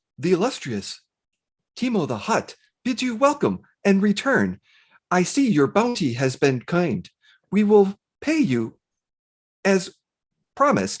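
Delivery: protocol droid translator voice. Voicing a protocol droid translating for a crime boss: protocol droid voice. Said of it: "the protocol droid kinda comes up, and it's like".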